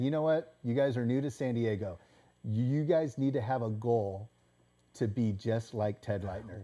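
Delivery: ordinary delivery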